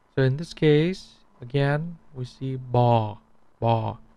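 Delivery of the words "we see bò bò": falling tone, lower. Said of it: "When you see a down tone".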